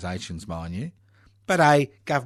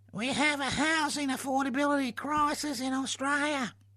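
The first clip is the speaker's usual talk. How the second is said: very high, silly, mocking, funny put-on voice; 7 dB quieter than usual. Urging people to Parliament House, mimicking how they all talk, in a funny mocking voice. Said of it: "Sorry for the funny voice".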